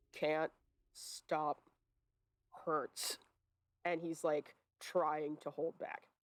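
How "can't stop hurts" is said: very low, halting, broken, lumbering dwarf voice. Game master voicing what the players hear, very low, broken dwarvish voice. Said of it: "you hear in very low, broken dwarvish".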